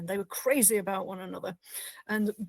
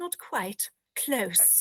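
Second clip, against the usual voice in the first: put-on posh English accent. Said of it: "O'Brien does that impression of Bashir saying".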